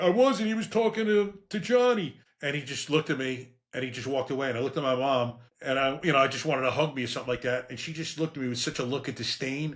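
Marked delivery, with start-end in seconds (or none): 0.0-2.2 heaving, tearful sobbing, very high and slow. Retelling answering their dad after being punched as a kid, retelling a crying plea. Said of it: "I'm like heaving, crying".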